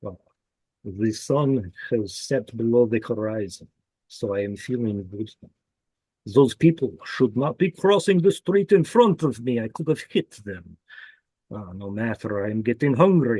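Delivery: put-on vampire character voice. Describing narrating a drive in character, the speaker does a vampire voice. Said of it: "if I were playing a vampire, I'd be like".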